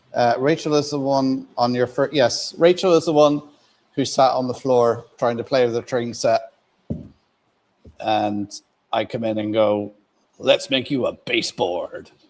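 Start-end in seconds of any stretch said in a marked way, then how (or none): 10.3-12.0 put-on corny, very cheesy voice. Retelling walking in on someone playing on the floor, in a real cheesy voice. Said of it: "in a real cheesy voice".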